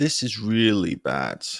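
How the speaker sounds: sad tune, pitch sinking steadily to bad. Example line expressing sadness, pitch gradually lowering toward bad. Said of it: "You lower your pitch here to show and express sadness".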